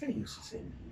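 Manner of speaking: soft, hushed, pleading whisper.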